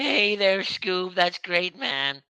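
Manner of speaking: high, goofy cartoon voice. Talking with another person, trying out voices: Shaggy impression. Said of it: "I could do Shaggy".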